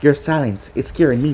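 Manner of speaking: ordinary delivery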